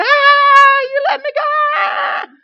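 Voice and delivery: very high, very loud, very slow, drawn-out scream. Recalling her first ride down the hill, the speaker imitates her screaming. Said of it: "she's screaming".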